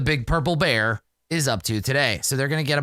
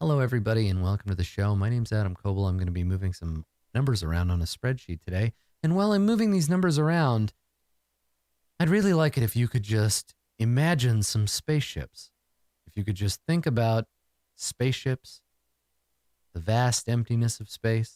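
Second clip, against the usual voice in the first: quiet, lower-pitched am radio voice; 4 semitones lower than usual. Speaker showing how public radio hosts all sound, in a quiet NPR radio host voice. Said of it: "this quiet kind of A M radio like".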